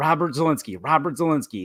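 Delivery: plain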